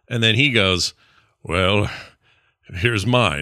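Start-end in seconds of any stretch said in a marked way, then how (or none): 1.4-3.4 fancy, grand fantasy-hero voice. Pitching an on-screen card exchange, the speaker voices the reply: Geralt impression. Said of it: "that's a good Geralt impression".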